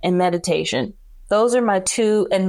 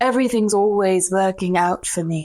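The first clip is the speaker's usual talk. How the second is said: put-on Australian-accented delivery. Quoting what a woman says when the speaker lays their head down, Australian accent. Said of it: "she's got this accent".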